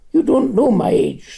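curt, cutting tone. Narrator reads Rimmer answering Alexander's remark about her age, sharply. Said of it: "said Rimmer sharply".

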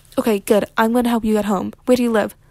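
ordinary delivery

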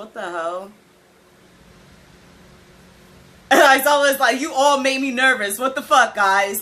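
tearful, crying while speaking. Reacting to test results in front of an audience; crying while talking. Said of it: "I can't believe I'm actually crying".

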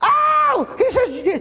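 happy shouting.

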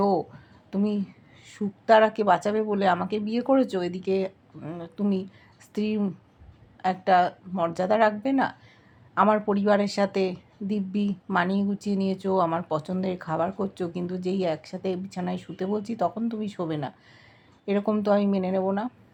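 plain

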